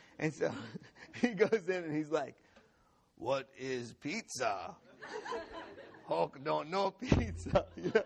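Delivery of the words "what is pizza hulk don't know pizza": slow, laughing character voice. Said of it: "flip into Hulk voice".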